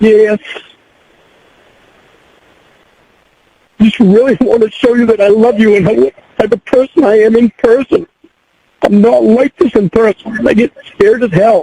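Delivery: tearful, weeping voice, crying through the words. Asked by the listener whether he is crying: crying while talking. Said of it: "Are you crying?".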